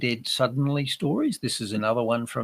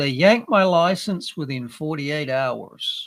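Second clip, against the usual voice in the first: put-on American accent; 3 semitones higher, 4 dB louder than usual. Quoting a man who was deregistered, in his American accent. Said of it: "To quote him in his American accent".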